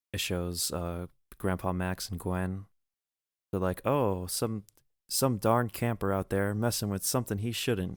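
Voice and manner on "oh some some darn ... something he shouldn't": ordinary delivery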